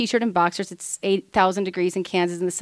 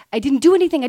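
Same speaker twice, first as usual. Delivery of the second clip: high, loud, play-acted scream; 5 semitones higher, 6 dB louder than usual. Telling how the speaker's dad confronted the wrong man, retelling a scream. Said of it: "Starts screaming back".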